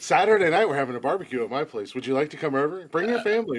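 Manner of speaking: too-friendly, overly nice cop voice. Acting out the nicest interrogator of all time: overly nice interrogator. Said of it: "Brian would probably be the nicest interrogator of all time".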